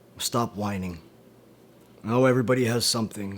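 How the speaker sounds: plain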